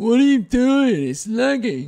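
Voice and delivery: shrill, very high, very loud outburst. Imitating the other speaker imitating him: impression of an impression of himself. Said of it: "an impression of you doing an impression of me".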